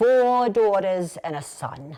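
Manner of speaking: put-on slow, proud-sounding New York accent.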